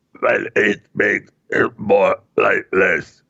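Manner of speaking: slow speech pushed through a throat hole. Showing how Val Kilmer sounds plugging his trachea to speak: imitating Val Kilmer speaking through trachea plug. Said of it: "I'm just giving you an example".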